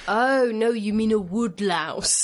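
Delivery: put-on awful British accent. Retelling their own past reaction, in an awful british accent. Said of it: "In a really sort of awful British way".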